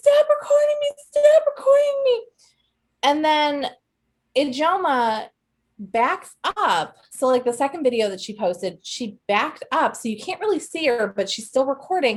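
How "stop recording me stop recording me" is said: put-on very high, loud, tearful screaming. Retelling a woman's outburst at being recorded: imitating someone screaming and crying. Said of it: "She's screaming, crying".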